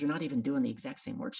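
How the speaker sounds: ordinary delivery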